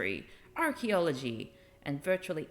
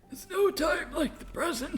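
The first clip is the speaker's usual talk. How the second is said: put-on very high, wheezing delivery; 13 semitones higher, 3 dB louder than usual. Repeating what a character just said, imitating a wheezy voice. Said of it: "With a final wheeze".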